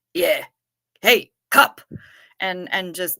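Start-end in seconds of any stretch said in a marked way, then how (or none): 0.2-1.9 put-on loud, broad, hammed-up, belted-out Jersey accent. Recalling going dressed as Carl and walking around in character, Carl impression, Jersey accent. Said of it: "with my best Jersey accent".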